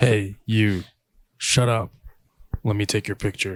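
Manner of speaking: put-on, exaggerated, really deep low voice. Opening the segment Shut Up and Let Me Take Your Picture, in a really deep voice. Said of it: "gotta talk in a really deep voice".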